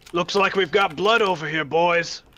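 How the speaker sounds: high, carrying, shouted yell. Voicing a dwarf at the far end of the bar: yelling in character. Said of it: "he yells".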